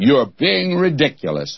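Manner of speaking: sniffy, dismissive, disdainful British tone. Retelling a man's reply, repeating it in a mock-disdainful British voice. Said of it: "he said it in that British disdainful voice".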